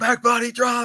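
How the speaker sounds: high, excited commentator-style yell.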